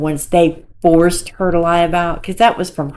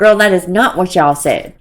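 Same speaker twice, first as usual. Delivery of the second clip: usual speaking voice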